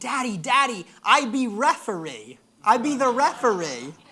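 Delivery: put-on very loud, drawn-out, eager little-kid yelling. Retelling how an excited child ran up with a plan: imitating a child yelling excitedly. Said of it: "comes up kind of yelling".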